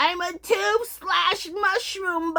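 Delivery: put-on old man voice, pitched very high, loud. Talking about a favorite collection, suddenly in an old man voice. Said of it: "I don't know why I sounded like an old man".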